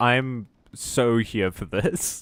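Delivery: dragged-out sarcastic tone. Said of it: "I know I sound kinda sarcastic right now".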